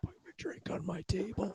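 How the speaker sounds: very quiet, breathy whisper under the breath. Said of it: "I just gotta whisper in it".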